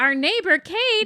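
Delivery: high sing-song voice.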